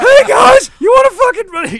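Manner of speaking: put-on very high, very loud drunken shout. Showing how he talks when he gets drunk, imitating a high drunk voice. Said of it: "He kind of starts talking guys. like this".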